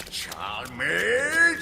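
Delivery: superior, condescending drawn-out call with swooping pitch. Mocking how a boss barks a last name: imitating a condescending tone. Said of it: "in a condescending tone like that".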